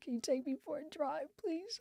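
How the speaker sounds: put-on crying, soft, high, tearful pleading tone. Retelling asking their son for a drive: re-enacting a crying plea. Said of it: "I'm crying".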